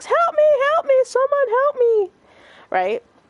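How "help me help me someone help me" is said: acted-out, very high woman's top-of-the-lungs scream. Telling a story, the speaker imitates a woman they heard screaming. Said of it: "screaming at the top of her lungs".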